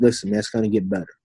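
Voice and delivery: ordinary talk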